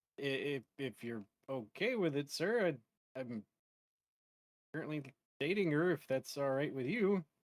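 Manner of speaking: halting, tongue-tied, frozen nervous stammer. Playing a character meeting his girlfriend's father: frozen in character. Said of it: "he's, like, frozen".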